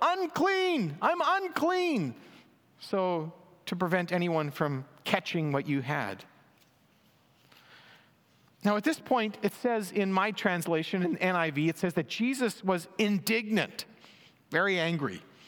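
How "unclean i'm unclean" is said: high-pitched shouted cry. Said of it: "you had to yell out".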